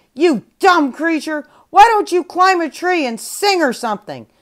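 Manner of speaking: loud, high-pitched shout at full force. At the stream, a panda shouts loudly at a parrot drinking nearby. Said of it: "the panda shouted loudly".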